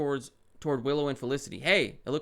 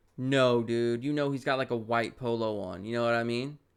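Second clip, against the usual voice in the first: ordinary talk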